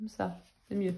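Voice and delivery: sweetest, softest, gentle little voice. Testing watercolours on camera, speaking in the softest little voice. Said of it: "je prends ma petite voix la plus douce".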